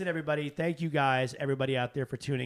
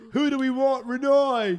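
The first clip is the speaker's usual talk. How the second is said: very loud, high-pitched, put-on British accent; 11 semitones higher, 9 dB louder than usual. Mimicking the accent another speaker used telling a story: imitating Renee's British accent. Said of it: "Sound like you're from Australia".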